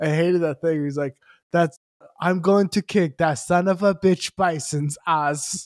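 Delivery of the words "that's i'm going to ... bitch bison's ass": put-on thickest French accent, much slower. Retelling what a man said: thickest french accent. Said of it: "thickest French accent".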